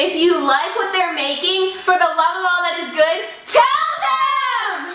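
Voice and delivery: really loud, high-pitched shout.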